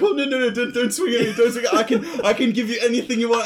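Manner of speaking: put-on, weird, high, giggly pleading voice. Imitating own past pleading when losing a game: imitating own weird giggly pleading. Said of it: "weird giggly".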